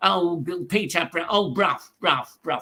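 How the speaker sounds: put-on ventriloquist dummy voice, stumbling over words. Showing how the ventriloquist's dummy used to sound: Archie Andrews voice. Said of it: "he had a voice like".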